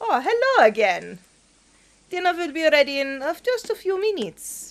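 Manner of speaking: put-on Russian accent. Voicing the character cooking at a frying pan: Russian accent. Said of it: "I'm trying to remember the Russian accent".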